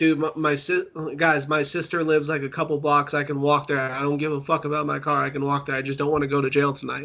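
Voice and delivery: plain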